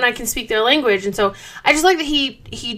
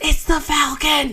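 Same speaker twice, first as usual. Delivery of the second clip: put-on awed whisper; 4 semitones higher than usual. Recapping the scene where Scott sees the Falcon, retelling an awed whisper. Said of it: "in awe, whispers".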